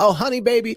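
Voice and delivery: put-on talking in an old folks' manner. Recalling how old folks used to talk: imitating old folks' talk. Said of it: "I used to hear old folks talk like this".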